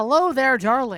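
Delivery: put-on booming Irish accent, very loud. Voicing Seamus from the game, who is Irish: Irish accent as Seamus. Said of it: "Seamus, you're Irish".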